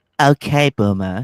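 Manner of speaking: loud, put-on Valley Girl accent. Reading a card after being asked for a valley girl accent: valley girl accent. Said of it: "Try to do it with the Valley Girl accent".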